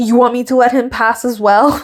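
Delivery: ordinary delivery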